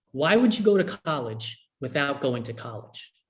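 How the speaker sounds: normal talking voice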